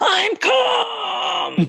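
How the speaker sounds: put-on very high, shrill, raspy, all-out child's tantrum scream. Retelling how an upset niece answered her mother: imitating a child screaming. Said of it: "she screamed at the top of her lungs".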